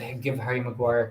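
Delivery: ordinary talk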